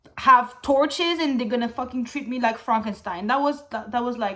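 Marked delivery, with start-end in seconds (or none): none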